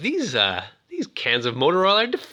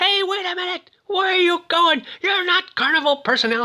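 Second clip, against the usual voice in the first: high-pitched angry scream. Retelling how the madman got out of his car, retelling a scream. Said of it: "he's screaming".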